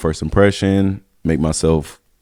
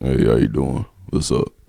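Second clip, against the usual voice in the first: affected, put-on low voice; 4 semitones lower than usual. Retelling a greeting used going into a date, in a put-on low voice. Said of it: "everybody do the low voice".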